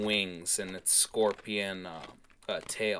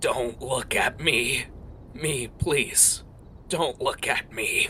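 sobbing, wheezing creature voice gasping for breath; 4 semitones higher than usual. Narrating a beast that looks toward you and speaks, sobbing and wheezing. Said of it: "this beast sobbing and wheezing as it struggles for breath".

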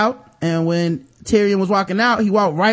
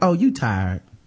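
put-on knowing, sassy older woman voice; 9 semitones lower than usual.

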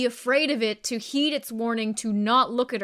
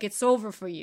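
put-on New Jersey dockworker accent; 3 semitones lower than usual. In an improvised scene, a fellow performer notes the slip into a new jersey dock worker voice. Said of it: "why are we slipping into the New Jersey dock worker".

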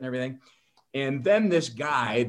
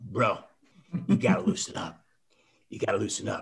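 husky, lowered voice; 4 semitones lower than usual. Retelling what Rodman said in a bar: husky Rodman voice. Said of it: "that husky kind of voice thing he had".

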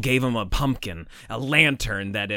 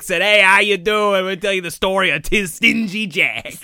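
New England pronunciation throughout; 7 semitones higher, 6 dB louder than usual. Imitating the actress who plays the town's mayor, New England accent. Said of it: "do like a real New England accent".

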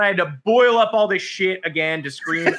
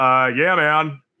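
put-on sarcastic podcaster voice, lower pitched; 2 semitones lower than usual. Describing a podcast, imitating his sarcastic replies: mock-sarcastic Ryan Russillo. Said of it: "Ryan Russillo being very sarcastic".

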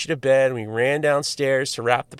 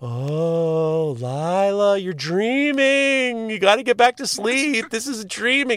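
ghost voice, higher pitch; 8 semitones higher than usual. Retelling coaxing lila back to bed at night, speaking like a ghost. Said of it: "I'm gonna speak like a ghost".

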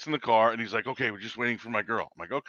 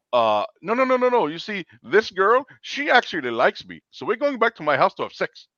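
very high, fake put-on Indian accent; 8 semitones higher, 8 dB louder than usual. Retelling what a man said to the speaker; put-on indian voice. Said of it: "I'm gonna do an Indian voice".

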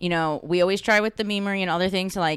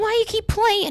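mock man's yelling, higher pitched, slower; 9 semitones higher, 4 dB louder than usual. Retelling a viral video of a man shouting at someone, imitating a yelling man.

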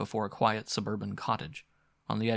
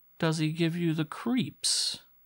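jeering, needling, taunting tone, pitched up; 7 semitones higher than usual. A man questions another man about his boss: mocking tone. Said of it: "his voice took on a mocking tone".

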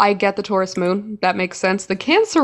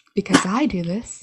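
put-on whispery voice, quieter; 4 dB quieter than usual. Imitating another speaker close to the mic: imitating someone's whispery voice. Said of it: "it's that whispery thing".

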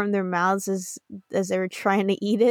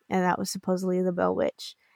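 usual speaking voice

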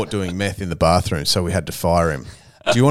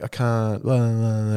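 play-acted whinging moan; 2 semitones higher, 5 dB quieter than usual. Building a story about a couple, imitating the woman whining.

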